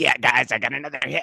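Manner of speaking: cartoonish bird puppet character voice. Imagining what a player says while flapping after a hit: Big Bird voice. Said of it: "the voice I hear is like".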